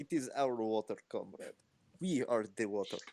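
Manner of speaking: put-on Russian accent. Voicing an elemental in a role-playing game: mock Russian accent. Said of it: "All elementals now have a Russian accent".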